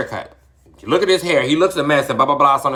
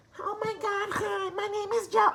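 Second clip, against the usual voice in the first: put-on nasal voice, very high, very quiet; 12 dB quieter than usual. Speaker demonstrates the voice she refuses to train for, nasal voice. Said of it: "sound like I'm nasally".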